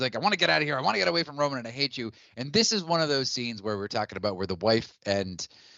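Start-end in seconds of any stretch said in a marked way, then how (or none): 0.2-2.1 acted-out fed-up, angry ranting outburst. Retelling a movie scene where Chet wants to leave: imitating pissed-off Chet. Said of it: "he's so pissed off".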